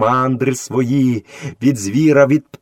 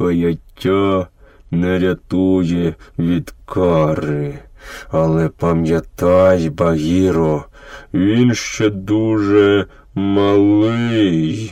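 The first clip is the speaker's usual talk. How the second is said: low, forced out through clenched teeth; 5 semitones lower than usual. Narrator reads Baloo answering Bagheera: through gritted teeth. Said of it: "процідив крізь зуби".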